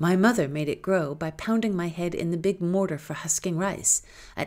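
ordinary delivery, nothing marked

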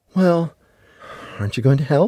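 quick, mild, gentle-toned delivery. Scooping up books, she speaks to him, said softly. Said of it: "She said softly".

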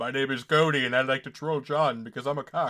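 low, dropped voice. Teasing a teammate during a match: cody impression. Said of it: "That was a pretty good Cody impression".

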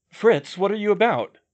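startled cry of alarm. The narrator, alarmed as the boat is pulled through the water, cries out: crying out in alarm. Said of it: "cried I".

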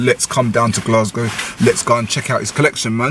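ordinary talk, nothing marked

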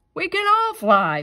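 very high-pitched words spoken through chuckling laughter. Reading a story, the other bats answer Pat, chuckling. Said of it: "the other bats chuckled".

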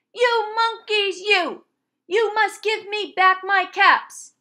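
furious, loud, high angry shout. Reading a picture book aloud, the peddler yells at the monkeys: angry shout. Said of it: "He stamped both his feet and shouted".

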